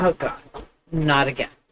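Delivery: flat and unimpressed. Voicing a child's face in a meme picture: deadpan. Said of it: "Just deadpan, resting bitch face".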